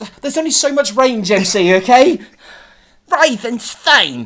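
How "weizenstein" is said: bad put-on New York accent, higher and louder. Redoing a character's call in a story after criticism: bad New York accent. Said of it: "We have very bad New Yorkian accents".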